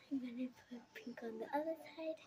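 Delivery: whispering. Describing their plan in front of someone meant to be surprised: whispering. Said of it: "You don't have to whisper".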